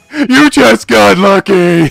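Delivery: mock-obnoxious sore loser voice. Quoting a sore loser's line, in an obnoxious put-on voice. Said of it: "I want to say that in an obnoxious voice".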